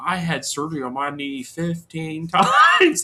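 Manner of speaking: very slow, completely flat monotone drone. Mocking a wrestler's "don't do it at home" commercial: monotone Rey Mysterio impression. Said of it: "it was just so monotone".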